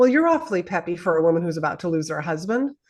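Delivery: wisecracking, joking, sarcastic, swooping teasing tone. Retelling her husband's remark a day before he passed: imitating someone sarcastic. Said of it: "'cause he was very sarcastic and funny".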